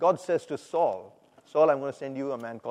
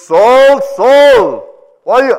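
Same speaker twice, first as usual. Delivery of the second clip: booming voice, much louder than before; 9 semitones higher, 19 dB louder than usual. Retelling Saul's story from Acts, giving the booming voice of Jesus. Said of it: "I heard this booming voice saying".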